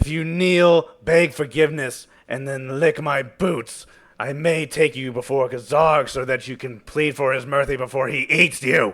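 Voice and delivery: high, very loud, bold scream rising upward. Game narrator voicing a bold Varger on a driver's seat, screaming up at the players. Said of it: "he's screaming up at you".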